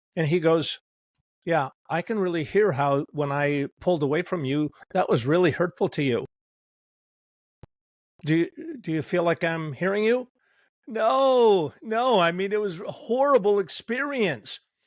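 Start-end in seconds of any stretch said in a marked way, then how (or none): none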